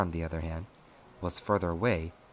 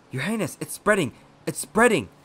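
shrill, full-throated, very loud, high cry of alarm; 13 semitones higher, 9 dB louder than usual. Narrator reading a doctor's words to His Highness as an infection spreads, shouting in alarm. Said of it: "The doctor shouted in alarm".

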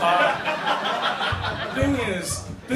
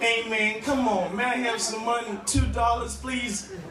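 higher-pitched bad American accent, begging tone. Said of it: "why are you speaking in an American accent".

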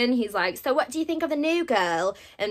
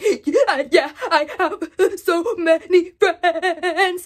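very slow, high, fighting back tears; 6 semitones higher, 6 dB louder than usual. Retelling a story where Nina answers her grandma's call, acting out holding back tears. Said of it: "Nina's trying to hold back tears".

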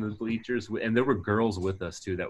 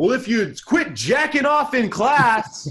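shrill blurt at top volume; 10 dB louder than usual. Retelling a mom blurting out in the bleachers: imitating someone blurting loudly. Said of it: "as loud as she could".

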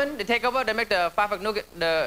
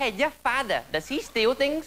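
put-on nonnative English accent; 4 semitones higher than usual. Imagining poor guys with accents trying a bad pickup line, in a put-on accent. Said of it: "Imagine the poor guys with the accents like".

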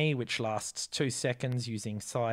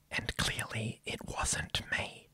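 hushed, tossed-off whispered aside; 5 dB quieter than usual. Telling about a card game with his wife, the speaker whispers an aside.

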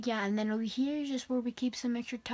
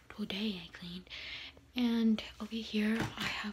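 soft whispering. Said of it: "Sorry, I'm whispering".

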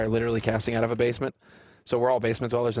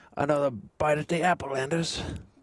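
slow, dragged-out, terrible put-on British accent; 4 semitones higher than usual. Doing a Henry line to a co-caster: terrible British accent as Henry. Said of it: "I have a terrible British accent".

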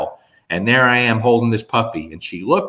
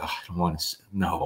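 put-on uncomfortable tone, lower and quieter; 4 semitones lower, 11 dB quieter than usual. Retelling Stephanie's reaction when her boss showed up, imitating Stephanie's discomfort. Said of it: "she's so uncomfortable".

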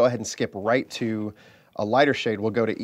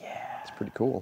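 very quiet, hushed whisper under the breath; 9 dB quieter than usual. Building a miniature base with others, replying about the handles, whispering.

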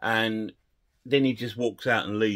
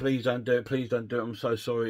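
put-on begging, pleading tone. Retelling a scene where a man begs the boss's men: mock begging. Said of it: "he's begging".

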